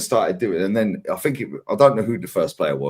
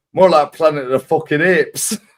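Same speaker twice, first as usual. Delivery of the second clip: put-on punchy, loud, pitched-up Northern English accent; 7 semitones higher, 5 dB louder than usual. Retelling a football manager's interview answer: Mick McCarthy Northern accent. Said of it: "Northern accent always makes it slap harder".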